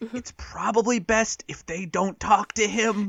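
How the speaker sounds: deliberately loud, high stage whisper, half aside. Leaning over to whisper to a companion while the others can hear: loud stage whisper. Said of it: "I'm whispering very loudly".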